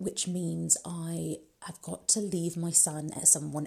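soft, voiceless whisper.

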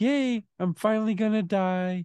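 high, cheery, sunny, upbeat voice. Describing a movie character who says this with a big smile, imitating someone smiling cheerfully. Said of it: "he's saying it with a big smile".

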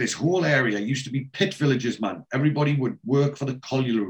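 ordinary talk

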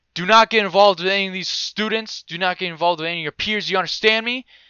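loud, high-pitched, scolding yell. Retelling the dean pointing at the speaker and yelling, retelling the dean's yell. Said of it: "the dean yells at me".

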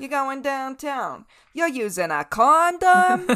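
put-on loud, high New England accent. Acting out being told you're going downtown, in an attempted New England accent. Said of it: "I was attempting to do a New England accent".

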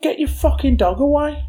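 high yelling. Retelling shouting at dog owners whose dog peed on a bag: retelling a shout. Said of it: "It was me that was shouting at them".

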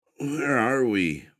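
drowsy, just-woken voice. [name] suddenly asks Fiona, who is driving, in a groggy voice. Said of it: "[name] suddenly said in a groggy voice".

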